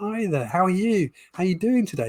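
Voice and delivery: friendly, enthusiastic. Speaker demonstrates a warm greeting tone for closer relationships, a bit of enthusiasm. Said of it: "A bit of enthusiasm".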